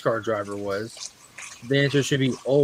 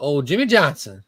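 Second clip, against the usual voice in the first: proper Southern-style pronunciation. Explaining how to say a name properly, in proper Southern pronunciation. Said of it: "It's just uh just proper proper Southern".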